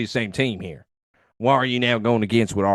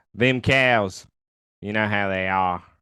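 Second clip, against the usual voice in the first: put-on Australian accent slipping into the speech. Performing as Deadshot, the speaker slips into an accidental Australian accent. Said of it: "I still got that Australian thing going".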